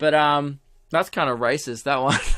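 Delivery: plain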